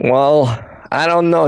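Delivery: slow, drawled, put-on Brooklyn accent. A character answers a companion asking where to wander first, brooklyn accent. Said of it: "Doing this Brooklyn accent's".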